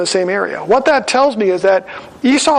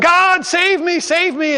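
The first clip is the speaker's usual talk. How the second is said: put-on crying out, much slower; 9 semitones higher than usual. Telling a story about a man in rising floodwater, retelling his cry to God. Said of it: "he's crying out to God".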